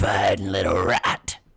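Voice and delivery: very loud, hulking lizard monster voice. Voicing a hulking lizard stepping behind a character: lizard monster voice. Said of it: "the lizard comes hulking over you ... And goes".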